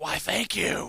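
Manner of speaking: hushed, breathy whispered superhero voice. Told their voice sounds older, the speaker answers sounding like Batman. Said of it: "now you sound like Batman".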